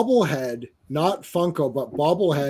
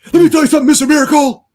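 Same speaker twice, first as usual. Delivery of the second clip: pro wrestler trash-talk voice, higher and louder; 13 semitones higher, 8 dB louder than usual. Acting out a villain calling out a rival: wrestling promo voice. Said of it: "like, a wrestling promo".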